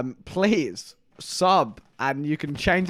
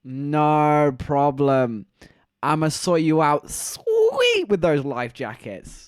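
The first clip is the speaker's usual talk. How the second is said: usual speaking voice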